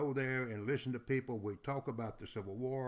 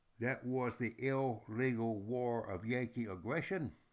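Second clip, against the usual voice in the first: plain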